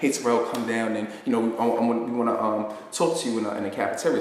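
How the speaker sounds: plain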